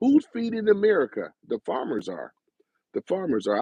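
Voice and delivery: sing-song commercial ad announcer delivery. Shouting out the farmers in his audience, the speaker sounds like a commercial. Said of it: "I sound like a uh, commercial, don't I?".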